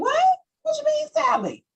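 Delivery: high, squeaky shocked disbelief. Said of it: "And you're like".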